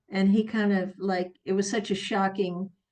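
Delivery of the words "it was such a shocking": ordinary talk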